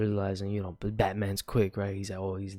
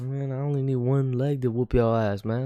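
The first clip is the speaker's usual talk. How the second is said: swaggering, boastful, cocky tone; 4 semitones higher, 3 dB louder than usual. Retelling a comic scene where Batman taunts Bane: imitating Batman trash talking. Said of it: "he be talking his shit".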